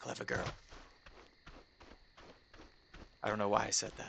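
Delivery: very quiet hushed whisper, barely under the breath. Near a cave on an island, talking to viewers: whispering. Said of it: "I also don't know why I'm whispering".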